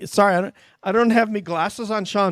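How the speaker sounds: light put-on Irish accent. Speaker reading out a sender's name without glasses on, a bit of Irish accent. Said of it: "I did a little bit of Irish for you".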